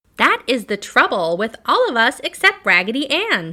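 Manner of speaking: very loud, squeaky little doll voice. The little penny doll cries out to the other dolls, squeaky voice. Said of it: "in a squeaky voice".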